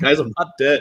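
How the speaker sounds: put-on tearful sobbing. Retelling how Kevin G gets on and cries: imitating Kevin G crying.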